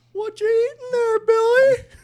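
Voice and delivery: creepy voice, very high-pitched, shrill and loud. Retelling a clown creeping toward a child: creeping Ronald McDonald voice. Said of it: "he just comes creeping over".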